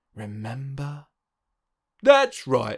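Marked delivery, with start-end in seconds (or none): 2.0-2.7 said with a smile. The frog replies to the cat and the dog; smiling. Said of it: "smiled the frog".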